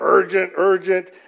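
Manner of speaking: put-on flat robotic voice. Telling an audience about the TV show Lost, the speaker does the Lost robotic alarm voice. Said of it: "there was a robotic voice that would".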